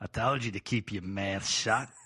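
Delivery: rough attempt at an Australian accent. Improvising a character turning back to snap at someone, in an attempted australian accent. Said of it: "I could just turn to a different kind of Australian".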